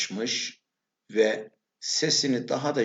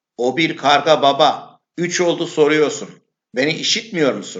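very loud, fed-up, irritated outburst, pitched up; 5 semitones higher, 9 dB louder than usual. Narrator reads a son answering his father's repeated question, irritated, raised voice. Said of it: "Sinirlendiğini belli edecek şekilde sesini yükselterek cevap vermiş".

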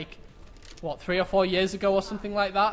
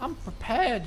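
voice cracking mid-phrase; 4 semitones higher than usual. Player getting ready for the next round: voice cracking. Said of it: "Voice crack".

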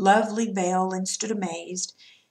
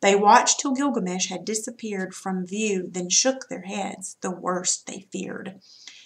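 plain

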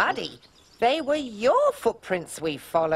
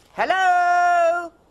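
loud, projected calling out. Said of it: "your own voice bouncing back".

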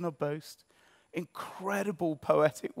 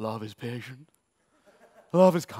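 put-on deep, very posh, plummy elderly vicar voice; 6 semitones lower, 3 dB louder than usual. Quoting wedding scripture as often heard: very posh elderly vicar voice. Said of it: "a vicar who's about sixty-eight, who's very, very posh".

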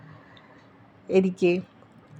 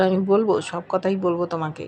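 plain reading voice

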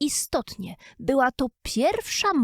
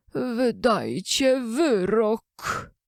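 trembling, unsteady voice, wyrok drawn out. The king, gone pale, shuts his notebook and addresses the jurors: quiet, trembling voice. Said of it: "cichym, drżącym głosem".

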